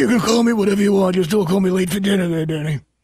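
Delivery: bad put-on Cajun accent, coach-style voice. Trying out an impression of the coach: bad Ed Orgeron impersonation. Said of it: "Is that a bad impersonation?".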